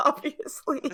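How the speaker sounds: high, loud, helpless laughing fit. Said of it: "I don't know why I'm laughing so much".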